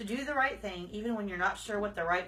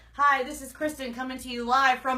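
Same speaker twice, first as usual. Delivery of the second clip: firm tv news reporter voice; 4 semitones higher, 7 dB louder than usual. Improv game: introduce yourself as a newscaster giving a firm report, firm newscaster voice. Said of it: "give us a very firm report".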